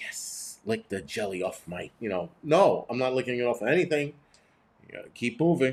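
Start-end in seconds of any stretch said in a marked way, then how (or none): 0.0-1.9 mock creepy voice, lower and quieter. Imitating a voice heard on a phone line: imitating a creepy tone. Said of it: "Saying it in that kind of tone is creepy".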